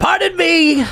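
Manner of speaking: high, smirking put-on impression voice.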